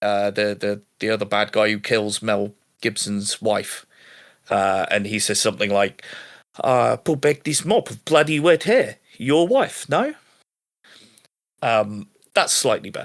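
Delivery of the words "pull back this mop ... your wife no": put-on high-pitched villainous South African accent. Quoting a film villain's sidekick, trying the accent: south african accent. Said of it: "don't do South African accents".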